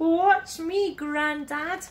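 high, eager calling out. Little bear calls to grandad as they reach a soft slope: calling out. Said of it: "called Little Bear".

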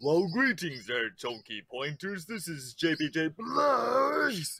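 mediocre arcade announcer voice, one word drawn out. Host reads a listener's call-in message aloud: mediocre Primal Rage impression. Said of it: "That's a mediocre Primal Rage impression there".

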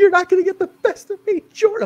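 very high, squeaky voice on the verge of tears. Imitating Deanna's voice that sounds about to cry: imitating her on the verge of tears. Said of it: "like you're about to cry any second".

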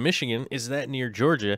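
ordinary talk

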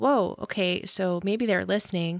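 normal talking voice

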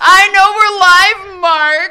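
very loud, deliberate, upset snapping voice. A live-show host, reminded by her co-host they're still live, answers upset. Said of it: "I'm upset".

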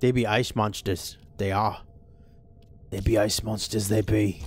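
salty, rough-edged buccaneer-style pirate voice. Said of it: "That was a pretty good pirate there".

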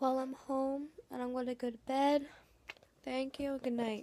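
sounding really tired. Saying good night after getting home before bed: sounding really tired. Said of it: "I'm really tired. Can you tell?".

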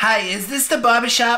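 high-pitched, put-on fake old lady voice.

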